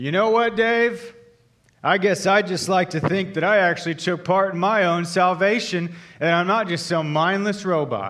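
furious, loud, high, angry yell. Retelling turning at the door and yelling at dave: retelling an angry yell. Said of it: "and I yelled".

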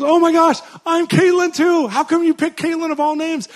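loud, thrilled, high-pitched squeal.

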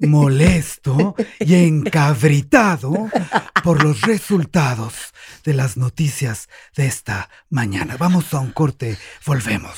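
put-on radio newscaster voice. Asked to show how he sounded, give the time and news in a Gutiérrez Vivó voice. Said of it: "Que haga la voz".

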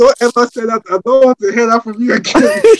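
mock screaming, very high, shrill, furious. Recounting a confrontation at work, re-enacting their own screaming. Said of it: "Stop screaming".

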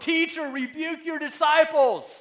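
very loud, high, drawn-out hollering. Retelling Pharisees calling out above the crowd, acting out yelling. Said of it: "they're yelling".

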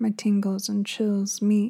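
plain reading voice

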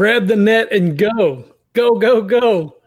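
urgent, high, slow, drawn-out calling out. Voicing Nash telling everyone to grab the net: Nash yelling orders. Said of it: "Nash just yells".

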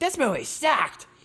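spat out high-pitched and angry. Retelling what a girl at the movie said: impression of an angry Guido. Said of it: "my best impression of a, a angry Guido".

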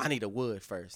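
put-on aggressive voice, sounds ready to fight. Retelling what a woman said in the car: imitating someone aggressively. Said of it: "Why you gonna make my voice sound aggressive?".

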